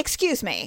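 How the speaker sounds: kind of gruff, brusque, interrupting delivery. Retelling a woman at a show asking about seats: imitating a gruff woman. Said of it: "being kind of gruff".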